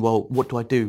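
ordinary delivery

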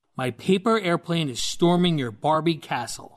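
ordinary talk, nothing marked

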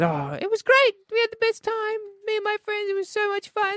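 very high, animated, swooping, sing-song voice. Retelling how Tiff answered about her night out: Tiff impression. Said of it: "Good Tiff impersonation".

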